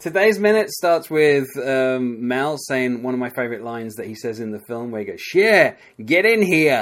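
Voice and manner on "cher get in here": loud, high holler, slow and drawn out. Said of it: "that's a terrible impression".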